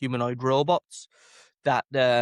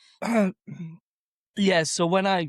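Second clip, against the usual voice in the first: croaky, frog in throat, pitched-up, stumbling delivery; 6 semitones higher than usual. Starting to answer a question from the host, frog in throat. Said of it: "got a frog in my throat".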